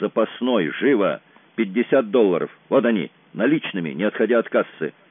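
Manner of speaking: usual speaking voice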